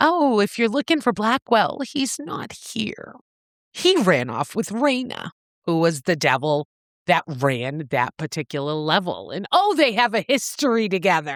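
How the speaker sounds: normal talking voice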